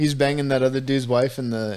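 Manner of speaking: plain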